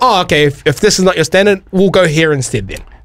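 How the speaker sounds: normal talking voice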